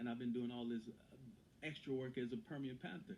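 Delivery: ordinary delivery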